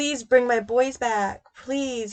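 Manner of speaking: put-on, earnest, imploring, repeated pleading. Describing a mother in interviews about her missing boys: imitating someone pleading. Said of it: "she is pleading, like pleading".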